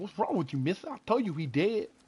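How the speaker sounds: botched fake Kentucky accent. Retelling a local's reply during a trip to Kentucky, bad attempt at Kentucky accent. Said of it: "I can't even do the fucking accent".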